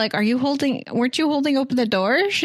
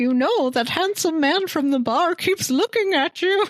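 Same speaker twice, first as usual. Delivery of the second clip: high put-on old lady grandma voice; 6 semitones higher than usual. Retelling a movie scene, quoting the mom: put-on grandma voice. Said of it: "I made her sound like a grandma".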